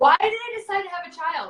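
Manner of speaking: exasperated cry, high and loud.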